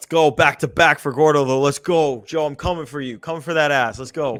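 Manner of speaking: loud, punchy, thick put-on New York accent. Reading out quiz standings, then taunting a rival player named Joe: New York accent. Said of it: "What was that New York accent you just did?".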